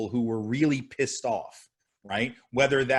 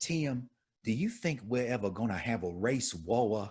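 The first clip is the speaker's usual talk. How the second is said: heavy Southern drawl, "war" stretched long, "Tim" in two syllables; 7 dB quieter than usual. Retelling what a woman asked him at a reunion, heavy Southern accent. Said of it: "heavy Southern accent".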